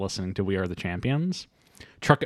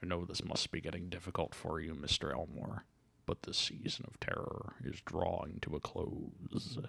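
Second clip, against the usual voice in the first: put-on character voice, much quieter; 4 semitones lower, 17 dB quieter than usual. Speaking to Mr. Elmore as the Mandarin, in the Mandarin voice. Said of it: "Your voice sounds a little different".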